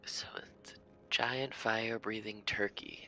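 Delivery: muttered under the breath, half to oneself. Voicing a character's quip about a giant turkey: muttered under her breath. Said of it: "Abigail says under her breath".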